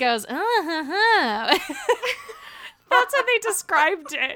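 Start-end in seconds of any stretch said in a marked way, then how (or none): 0.3-1.6 higher, slow, mocking scat. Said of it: "scatting mockingly".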